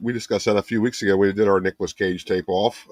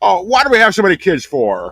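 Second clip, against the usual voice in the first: mock, very high, loud, swooping, furious angry outburst; 10 semitones higher, 7 dB louder than usual. Quoting a movie scene where the character gets really pissed off: imitating angry Jimmy Stewart. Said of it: "really pissed off".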